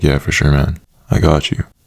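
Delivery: ordinary talk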